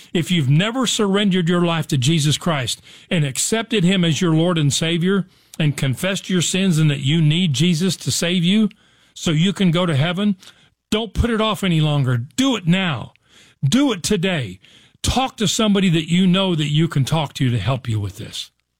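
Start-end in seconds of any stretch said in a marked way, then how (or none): none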